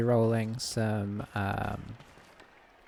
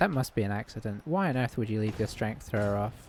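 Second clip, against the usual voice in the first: usual speaking voice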